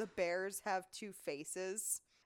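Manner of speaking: usual speaking voice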